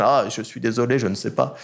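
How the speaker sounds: ordinary delivery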